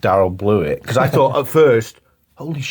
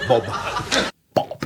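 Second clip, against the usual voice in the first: quieter, stammered "B" sound; 6 dB quieter than usual. Recalling Rowan Atkinson in Blackadder, Rowan Atkinson stammering on B. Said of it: "He couldn't pronounce his uh, B's, so he always had to say it like this".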